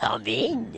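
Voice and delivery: ugly-sounding voice. Voicing a character answering a knock again: ugly voice. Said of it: "sound ugly".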